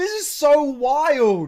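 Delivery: loud, shrill, high, slow, wild stretched-out screaming. Reacting to a video with another speaker, loud screaming. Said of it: "Sorry to be so loud and screaming".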